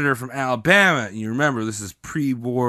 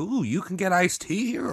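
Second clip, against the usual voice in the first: put-on delighted voice, higher and quieter; 5 semitones higher, 7 dB quieter than usual. Acting out Buchanan being enticed in South Carolina: imitating Buchanan, delighted. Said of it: "Buchanan's going down to, like, South Carolina being like".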